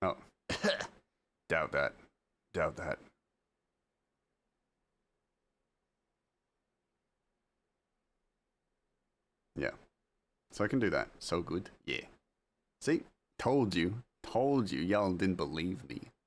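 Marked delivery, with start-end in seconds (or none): 0.0-3.0 gravelly, grunted delivery in American voice. Speaker shows listeners the Geralt impression they claimed to do: Geralt grunt. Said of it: "like the grunt where he just goes".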